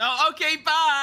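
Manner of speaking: shrill, very high, full-volume yelling shout. Calling out in character to red eyes in the water: yelling. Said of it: "who are you yelling to?".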